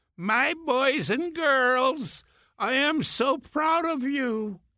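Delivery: very high-pitched speech. Recalling La Guardia addressing students from the stage, imitating La Guardia's high-pitched voice. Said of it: "he came on in his high-pitched voice and said".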